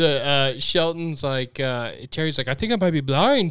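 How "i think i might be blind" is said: put-on Irish accent, faster. Retelling a scene, quoting Terry's line, Irish accent. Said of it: "I don't know why I just did an Irish".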